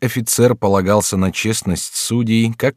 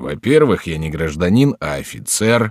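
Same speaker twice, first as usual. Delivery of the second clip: plain reading voice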